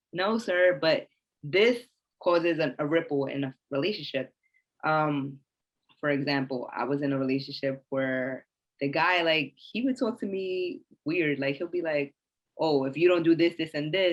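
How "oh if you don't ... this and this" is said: imitated snippy, sassy man's attitude. Describing a past relationship, the speaker imitates the guy with a little attitude. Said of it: "like with a little attitude".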